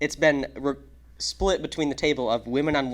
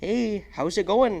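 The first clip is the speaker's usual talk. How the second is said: put-on Canadian accent with raised pitch; 8 semitones higher than usual. Imagining Canadians moving south and greeting people, spoken in a Canadian accent. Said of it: "try to speak in like the Canadian accent".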